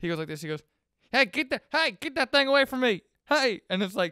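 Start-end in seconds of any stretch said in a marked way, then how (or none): 1.1-3.6 acted panicky, flustered fright, terrified, high, loud yelp. Retelling a comedy sketch where a horse approaches: imitating Will Ferrell's terrified Bush. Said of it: "because he's terrified of him".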